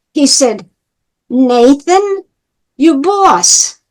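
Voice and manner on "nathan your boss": put-on thick, broad, heavy New York accent. Quoting a man's reply during a conversation, in his accent. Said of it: "in his accent".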